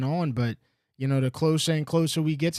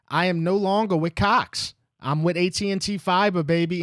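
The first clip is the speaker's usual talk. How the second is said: thrilled, excited, drawn-out delivery; 4 semitones higher than usual. A live streamer gives the show's biggest announcement: excited. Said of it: "you can hear it in my voice".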